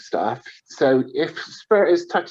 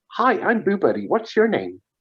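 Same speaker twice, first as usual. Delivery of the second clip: put-on eerie, high, creepy American child accent; 6 semitones higher than usual. Describing a teddy that picks up on spirits, the speaker imitates its greeting: creepy Boo Buddy child voice. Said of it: "really creepy um, American child's accent".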